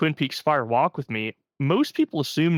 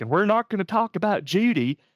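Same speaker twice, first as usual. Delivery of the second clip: put-on terrible, overdone Southern accent, pitched up higher; 6 semitones higher than usual. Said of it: "in his terrible Southern accent".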